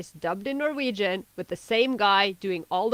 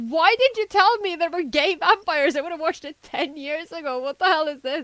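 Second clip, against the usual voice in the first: put-on frantic, worked-up screaming, high-pitched; 8 semitones higher than usual. Recounting being made to watch a film by their girlfriend; retelling a scream. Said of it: "like screaming at her".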